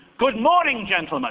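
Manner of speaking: strong put-on English accent. Retelling how he greets Americans on foot, in as English an accent as he can. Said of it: "say in as English as accent as I can".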